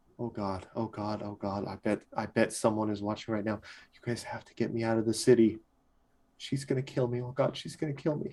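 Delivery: hushed, panicked, fretful tone. Character realizing he is in the middle of the street, panicked. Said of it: "panic and worry".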